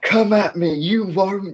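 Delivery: put-on very high, drawn-out, raging shout. Playing a raging character in a fight, shouting at enemies: raging character shouting. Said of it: "I'm just shouting there, like".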